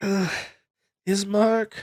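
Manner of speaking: weak soft call. Playing a woman who just woke up, weakly calling out for someone. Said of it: "she sort of like is weakly calling out".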